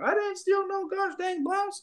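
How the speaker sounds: put-on very high, frantic, flustered old lady voice. Retelling a security stop where the accused woman denies stealing, imitating a freaked-out old lady.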